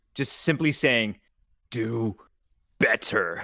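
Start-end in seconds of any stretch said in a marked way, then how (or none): 1.7-3.5 hellish growling voice, lower pitch. Using a suggestion power in a game, a voice heard in everyone's minds, growling hellish voice. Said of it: "a growling and um hellish hellish voice".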